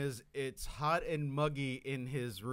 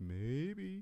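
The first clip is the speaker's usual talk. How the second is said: put-on doubtful, skeptical tone; 3 semitones higher, 3 dB quieter than usual. Mimicking the other speaker's tone about a ghost story: imitating someone's doubtful tone. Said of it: "a tone in your voice".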